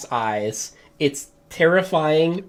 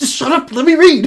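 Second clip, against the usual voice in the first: mock excited shushing, very high and very loud; 13 semitones higher, 10 dB louder than usual. Retelling how someone hushed them while they read from the stone: mock excited shushing. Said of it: "excited shushing".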